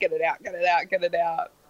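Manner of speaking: ordinary delivery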